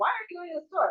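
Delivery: annoyed rising inflection. Showing how inflection changes a question said to Eric, irritated question. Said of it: "with that inflection, you can also hear there's some what? Irritation".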